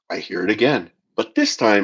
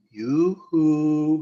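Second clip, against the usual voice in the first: high, hushed, barely audible half-whisper; 6 semitones higher, 5 dB quieter than usual. Retelling what something half-whispered in the brother's ear: imitating a half-whisper. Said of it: "whisper in his ear".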